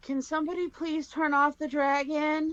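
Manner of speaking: small, tiny, high voice at full volume. Game narrator voicing someone behind the griffin, in a loud but tiny voice. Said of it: "you just hear this this loud but tiny voice go".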